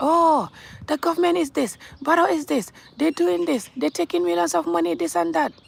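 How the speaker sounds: put-on angry, raspy, high, rough screaming. Speaker addressing viewers who complain about the government, imitating angry screaming. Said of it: "See how you are screaming and angry".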